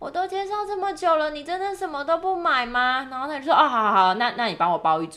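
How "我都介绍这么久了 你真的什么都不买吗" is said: put-on high, sweet, milky, cutesy girlish baby voice. Retelling how a coworker pushed a customer: imitating a cute sweet girly voice. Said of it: "她就用很奶的声音讲说".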